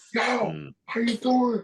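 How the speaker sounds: play-acted animated, loving voice, very high and slow. Retelling a man's greeting after 25 years apart: retelling an animated, loving greeting. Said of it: "it was animated like crazy love".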